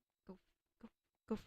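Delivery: stuttering, tripping over words. Addressing someone who said they were non-binary: stuttering. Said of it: "I'm gonna stutter".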